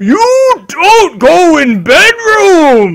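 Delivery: shouting. Narrating a scene where he snatches her up, yelling in your face. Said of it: "he like yells in your face like".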